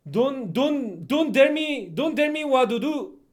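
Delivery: very loud, high-pitched put-on Italian accent. Speaker asking mister Chen Chen to try a phrase, demonstrating it in an Italian accent. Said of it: "with Italian accent".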